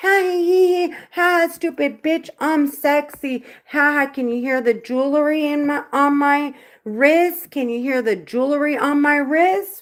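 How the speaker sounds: smug, cocky, jeering tone with cackling. Imitating the voices that first talked in the speaker's head: imitating cocky taunting voices. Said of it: "how cocky these bitches were".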